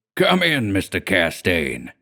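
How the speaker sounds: deep, hearty cry, swooping. Narrator reads an armourer calling out to the narrator in the doorway: deep, hearty voice. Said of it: "cried in his deep, hearty voice".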